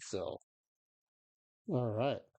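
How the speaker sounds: words said through a yawn mid-phrase. Wrapping up an MVP prediction on the show, yawning. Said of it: "I was yawning when I said that".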